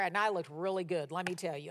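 quick, ironic, tongue-in-cheek, sarcastic tone. Recalling being motion sick in front of classmates: sarcastic. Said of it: "And I'm being sarcastic".

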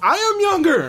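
very high-pitched shouted yell. Retelling a scene where one Doctor answers another: imitating someone yelling. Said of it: "And he yells".

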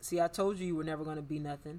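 ordinary talk, nothing marked

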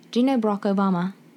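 put-on quick British accent in a schoolkid voice. Speaker voicing a schoolchild asking an American a question, in a British accent. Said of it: "I will speak in a British accent when I'm speaking as the children".

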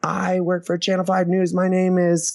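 mock yelling, high-pitched and shrill. Retelling how she took the mic during a stand-up set: imitating someone yelling. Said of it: "she starts yelling".

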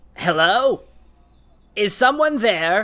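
reedy, thin calling voice. Game master voicing someone the players hear in the distance: thin, reedy voice. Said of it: "a thin, reedy voice go".

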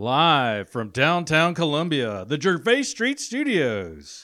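loud, swooping radio announcer voice. Introducing the show's studio to listeners, radio announcer voice. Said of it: "I love the radio voice".

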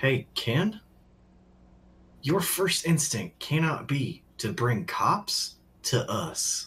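secretive, confiding, conspiratorial stage whisper. Speaking in character, checking nobody is eavesdropping: speaking very quietly. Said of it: "I will just very quietly".

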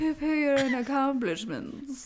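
sort of posh-sounding delivery. Repeating a phrase to show how it was said: posh way of saying it. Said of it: "the sort of posh way to say it".

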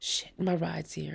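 ordinary delivery

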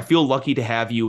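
ordinary talk, nothing marked

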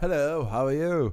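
put-on English accent. Showing the listener they'd understand him better, speaking in an English accent. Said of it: "if I do an English accent".

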